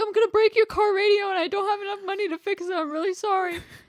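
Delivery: play-acted, very high, loud sobbing plea through tears. Retelling a breakdown, the speaker repeats what they told a friend, imitating own past sobbing. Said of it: "I started crying like fucking crazy".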